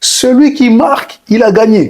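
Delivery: very high-pitched, put-on Portuguese accent. Recalling an assistant coach who throws the ball in the air and speaks, in a Portuguese accent. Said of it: "avec son accent portugais".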